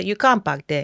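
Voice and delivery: imitation Nigerian accent. Recalling a parking attendant's words, the speaker repeats them in a Nigerian accent. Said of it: "when I want to get into my Nigerian".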